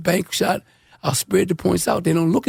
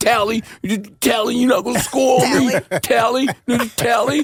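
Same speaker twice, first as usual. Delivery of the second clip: put-on furious, pumped-up, taunting voice; 5 semitones higher than usual. Retelling how a pumped-up opposing player taunted him mid-game, imitating an angry, pumped-up player. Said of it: "steam coming out of his head".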